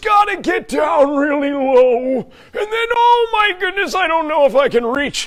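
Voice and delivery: high, laid-on, put-on old grandpa voice. Joking about how he talks, the speaker slips into an old grandpa voice. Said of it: "Instead of sounding like Grandpa".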